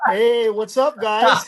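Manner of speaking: attempted put-on Hawaiian Pidgin accent. Redoing the channel greeting after being told it was good, attempted Hawaiian Pidgin accent. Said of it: "I have to work on my accent".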